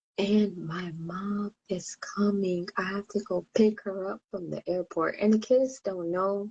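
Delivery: hushed whisper. Telling viewers about a birthday and a visit the kids don't know about, whispering. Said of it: "that's why I'm whispering".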